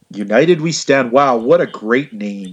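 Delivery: very sarcastic, slow, heavy, mocking tone. Reacting to the name of a wrestling pay-per-view: very sarcastic. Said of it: "I'm being very sarcastic".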